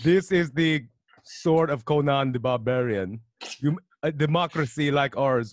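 put-on horrible Russian accent, very slow and drawn out. Speaker acting out a movie quote, in a bad russian accent. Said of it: "my Russian accent's fucking horrible".

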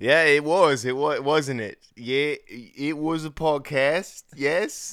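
attempted Australian accent, drifting New Zealand. Podcast hosts doing the outro, in an attempted Australian accent. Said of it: "you're doing more New Zealand".

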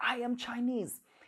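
acted-out proud, lightly called out shout. Retelling how he shouted after winning the competition: imitating a shout. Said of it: "he shouted out".

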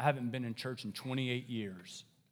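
sudden gruff, low voice. Retelling a man's sudden turn in a conversation with him, imitating a gruff voice. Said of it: "he got this gruff voice all of a sudden".

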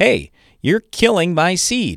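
very high, swooping yell. Retelling how dad yelled at him over the seed bag, retelling dad's yell. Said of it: "our dad is yelling at me like".

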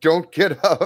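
loud, high yell. Playing a character running to a hurt ally: in-character shout. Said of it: "I'm shouting".

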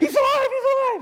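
very high frantic voice. Acting out a woman running in with news: imitating a frantic woman. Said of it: "I'll do my best impersonation".

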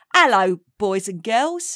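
put-on Cockney accent. On a podcast, a guest runs through accents, doing Cockney.

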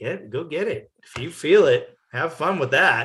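put-on full Texas accent, nicely done. Retelling what Thomas told him during the race, imitating Thomas's Texas accent.

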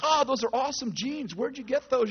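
car salesman patter. Retelling how a salesman on a car lot flatters you: imitating a car salesman. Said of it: "the guy comes up and he's like".

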